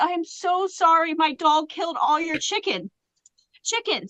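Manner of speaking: mock tearful voice. Retelling apologizing to new neighbors about the dog: imitating her own crying. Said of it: "I'm, like, crying".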